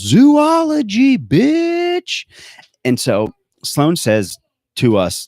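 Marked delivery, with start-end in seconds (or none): 0.0-2.3 mock very high whooping shout, last word stretched. Retelling a movie scene where a character rides in and yells: imitating a yell. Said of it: "rides in on an elephant and yells".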